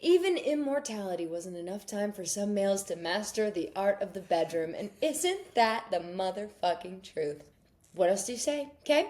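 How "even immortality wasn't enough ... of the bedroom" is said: ordinary talk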